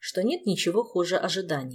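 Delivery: ordinary delivery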